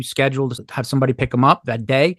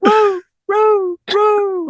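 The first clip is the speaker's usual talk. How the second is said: mock squealing, much higher and slower; 4 dB louder than usual. Retelling how he cried out as the speaker walked away, imitating squealing. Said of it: "He was squealing".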